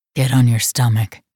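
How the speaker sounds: deep, low growling voice. He gives her an order during an intimate scene, in a deep growl. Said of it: "His voice was a deep growl".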